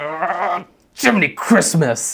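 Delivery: mock very angry. Retelling an engineer's reaction when enraged: imitating someone really angry. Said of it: "you could tell he was really angry".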